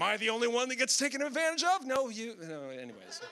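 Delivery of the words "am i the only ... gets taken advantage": put-on high, loud sarcastic whining complaint.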